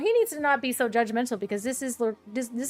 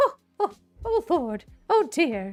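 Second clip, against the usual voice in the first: stiff, high, put-on sci-fi android voice; 6 semitones higher, 3 dB louder than usual. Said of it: "C three P O vibes".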